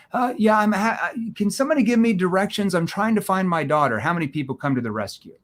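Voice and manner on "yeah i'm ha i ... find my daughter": high, confused stammer, lost and befuddled. Showing a confused tone as a lost old man asking for directions: put-on confused tone. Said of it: "a confused tone".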